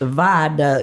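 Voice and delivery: southern country accent on viaduct. Saying a road name the way the other speaker asked: country accent. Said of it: "I'm real good at the country accent".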